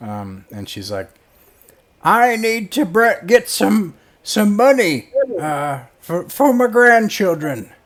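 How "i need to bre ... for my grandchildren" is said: shrill screeching on every word, very high and loud. Voicing a character in a tabletop game who screams as she talks, screaming while talking. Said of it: "she screams at you when she talks".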